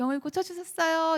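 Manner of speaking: high, cheerful preaching voice. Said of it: "화기애애하게".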